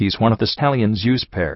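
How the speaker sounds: plain reading voice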